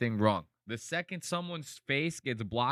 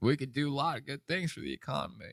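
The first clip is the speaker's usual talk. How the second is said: put-on smooth-talking voice. Imitating how Bill Clinton would smooth talk a girl: Bill Clinton voice. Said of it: "you hit that voice".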